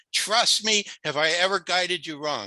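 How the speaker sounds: put-on small, gentle touch of a Yiddish accent.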